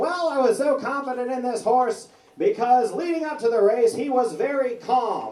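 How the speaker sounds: super high-pitched, piping jockey voice. Retelling a jockey's answer about the race, in a super high-pitched jockey voice. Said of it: "super high-pitched voice".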